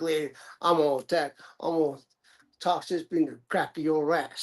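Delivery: put-on, hilarious, comic old granny voice. Retelling a line from the grandma in Nutty Professor, imitating her. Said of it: "imitate her".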